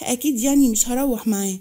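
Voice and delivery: ordinary delivery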